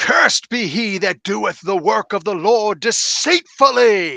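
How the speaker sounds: loud shouted outburst. Voicing a fighter who shouts a Bible curse at an enemy: NPC shouting a curse. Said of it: "he shouts out".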